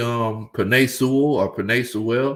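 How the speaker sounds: ordinary delivery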